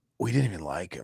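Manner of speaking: low, quiet, rough put-on voice. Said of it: "I'm trying to trying to do a [name] voice".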